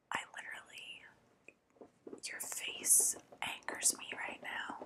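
hushed, jealous whisper. Asmr roleplay as a jealous girlfriend, in a jealous girlfriend whisper. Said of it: "ASMR Jealous Girlfriend".

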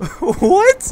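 high, loud shocked outburst.

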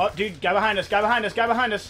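loud, urgent call-out.

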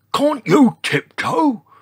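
very high, loud, insistent, demanding tone. A narrator reads a character's line to a heavy-footed dinosaur, demanding. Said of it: "Demanded George".

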